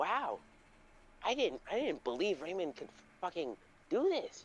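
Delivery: put-on gleeful voice. Retelling how a woman reacted to a kid being secluded, acting all happy. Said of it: "she was just like all happy".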